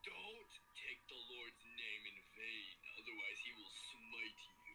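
very low, gruff, rumbling warrior voice. Joking around with others, the speaker slips into a Kratos voice. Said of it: "Why do I sound like Kratos".

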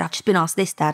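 ordinary delivery

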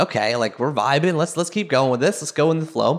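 ordinary talk

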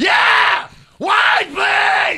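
mock screaming. Acting out ordering wine in a made-up restaurant: mock screaming. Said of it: "You gotta scream every time".

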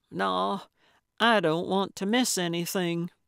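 plain

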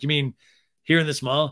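ordinary talk

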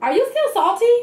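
mock snippy attitude. Retelling what she said to the speaker's sister, retelling a remark with attitude. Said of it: "she said it with attitude".

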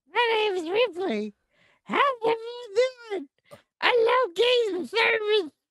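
very high, tiny toy figure voice. Giving a voice to a little Fortnite man on the microphone: voicing a little Fortnite man. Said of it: "Hello, Fortnite man".

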